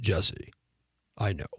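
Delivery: put-on soft, low baritone voice. Retelling what a man with a baritone voice said to him, imitating a baritone voice. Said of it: "he had this baritone voice".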